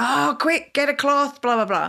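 acted half shout. Retelling a reaction to a child spilling a drink: imitating own past shouting. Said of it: "I'd sort of shouted at him and went".

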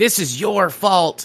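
sudden high yell. Retelling how the killer shot the hotel manager and blamed you, retelling a yell. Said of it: "And he yells at you".

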